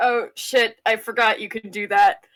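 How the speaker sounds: anxious, hurried exclamation. Voicing a nervous character caught off guard: nervous in character. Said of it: "Andy gets nervous".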